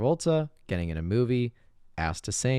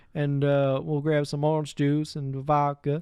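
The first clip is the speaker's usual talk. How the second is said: very strong put-on Southern accent, higher pitch; 5 semitones higher than usual. Showing how he talks to Percy, in a very strong Southern accent. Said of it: "it's a very like strong Southern accent".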